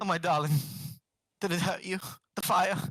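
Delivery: worried, fretful, doting, coddling fussing tone. Voicing a character fussing over someone who got burned: fussing over someone. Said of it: "Yagura's just fussing over Robert".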